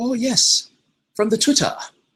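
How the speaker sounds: high, loud put-on South African accent.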